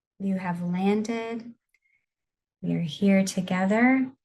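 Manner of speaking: slow and soft. Guiding listeners through a grounding breathing exercise, in a slower, softer voice. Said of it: "the tone of my voice a little slower and softer".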